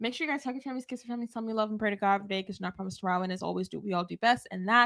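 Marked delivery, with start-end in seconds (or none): 0.0-3.2 very quiet, very fast, hushed, rushed rattle. Closing out to the audience while trying to leave, talking very fast. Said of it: "Why do you talk so fast?".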